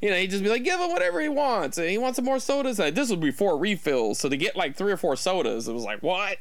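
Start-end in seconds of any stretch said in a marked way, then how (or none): 0.6-2.8 put-on Italian American accent, pitched very high. Recalling a man ordering sodas, imitating him in an Italian American accent. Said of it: "I'm not trying to do a bad impression of an Italian American".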